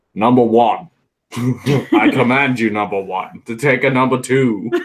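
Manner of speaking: slow, put-on British accent. Asked whether you can do the impression, show how simple it is with a British Captain Picard impression. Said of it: "that that's Captain Picard. It's just British".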